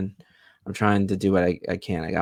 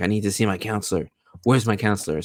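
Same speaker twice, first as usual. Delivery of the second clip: acted, panicking male voice, losing control. Speaker retells a man demanding his counselor, imitating a man freaking out. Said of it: "this guy starts freaking out".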